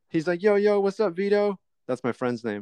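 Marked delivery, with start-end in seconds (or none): 0.4-1.6 "yo" stretched out long and pitched up high. Retelling a visit from a neighbor who sounded like J-Rock, imitating J-Rock. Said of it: "He was like J-Rock".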